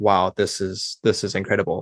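ordinary talk, nothing marked

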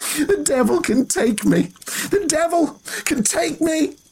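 very high, half-mad cackling laughter. Reading a novel, an older woman who has slapped away help answers, cackling. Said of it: "she cackled".

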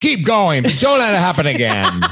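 put-on high, swooping old-timey banker voice. Acting out your own past reply to a man, in an old-timey banker voice. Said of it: "He sounded like an old timey banker from a 1940s movie".

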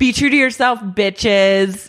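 breezy, high, mild half-shouted yell. Retelling someone's last words to a group while leaving: retelling a shout. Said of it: "If you're shouting".

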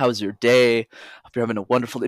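very soft, gentle, tender voice. Showing how the speaker talks with their mom, very soft. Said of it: "Notice how my energy has completely changed".

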